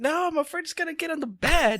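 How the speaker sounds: very high, frantic, panicked yelling. Recounting a panicked moment with someone just woken, retelling own yelling. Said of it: "why are you yelling at me?".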